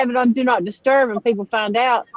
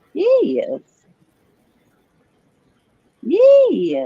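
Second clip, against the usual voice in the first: cartoon hen voice, much higher; 9 semitones higher, 3 dB louder than usual. Agreeing about a parts store, in a Bugs Bunny mother hen voice. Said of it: "my impersonation of that mother hen on Bugs Bunny".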